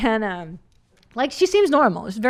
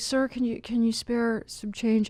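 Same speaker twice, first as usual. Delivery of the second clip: put-on begging tone, quieter; 6 dB quieter than usual. Retelling how a homeless man asked for money: imitating a man begging. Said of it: "begging for money".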